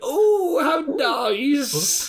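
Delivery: very high, sweet, dainty put-on voice. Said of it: "exactly how fucking, uh, Eva would describe it".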